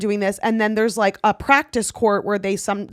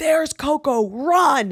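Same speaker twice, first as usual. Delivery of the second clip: put-on short, mild, high-pitched yell; 6 semitones higher than usual. Retelling how her mom screamed at the practice court: imitating someone screaming. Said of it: "her mom just screams".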